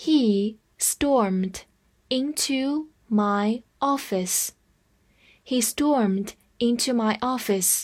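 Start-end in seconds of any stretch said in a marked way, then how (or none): 0.0-4.5 slow, careful read-along. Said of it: "我们慢慢来读".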